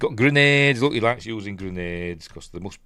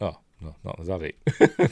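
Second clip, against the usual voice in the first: ordinary talk, nothing marked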